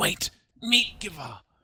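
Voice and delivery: loud, high-pitched, booming voice. Game narrator voices a figure calling into the players' heads: loud voice in your head. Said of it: "you hear a loud voice in your head go".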